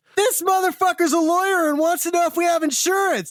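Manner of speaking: yelling. Retelling how his wife yelled to the waiting line: imitating someone yelling. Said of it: "she just yelled to the line and said".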